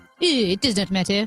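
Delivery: put-on French accent. Repeating own earlier line to a co-host in a French accent. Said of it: "It was French".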